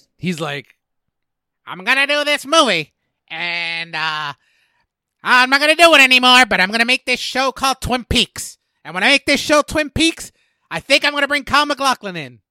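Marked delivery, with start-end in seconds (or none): 1.7-12.3 shrill, very high, loud voice. Imagining what the director might have said about the project: David Lynch impression. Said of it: "Was that a good David Lynch?".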